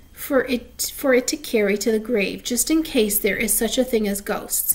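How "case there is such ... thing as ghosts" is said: ordinary delivery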